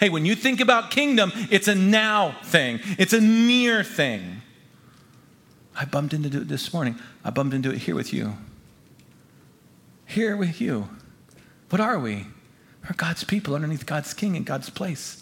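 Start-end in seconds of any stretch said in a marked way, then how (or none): 0.0-4.4 said with emphasis. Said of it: "Jesus says emphatically".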